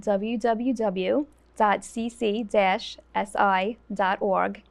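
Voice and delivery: very slow, spelled-out delivery.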